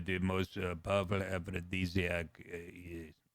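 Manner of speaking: put-on statesman voice, halting. Speaker lists powerful men, then quotes one: Henry Kissinger impression.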